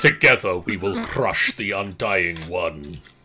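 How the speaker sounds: deep, loud, rumbling shadow creature voice. A monstrous tentacled shadow addresses those who summoned it, rumbling voice. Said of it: "A rumbling voice echoes through the room".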